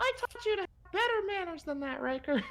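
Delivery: very high, ghostly, spectral voice. Voicing a ghostly grandmother scolding riker: spectral voice. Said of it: "in a spectral voice".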